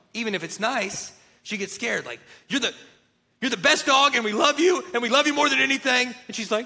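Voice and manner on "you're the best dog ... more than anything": loud, harsh, hard-edged raised tone. Acting out dog owners praising their dog, in a mock-harsh tone. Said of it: "if they say something in a harsh tone".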